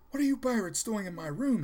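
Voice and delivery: very high, loud, insistent and demanding. Edward, waking at night to find pirates around his bed, to them: demanding. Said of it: "he demanded".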